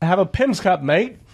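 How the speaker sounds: bad put-on Australian accent. Addressing Southern Hemisphere listeners about a drink, in a bad Australian accent. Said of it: "That's the only accent I know".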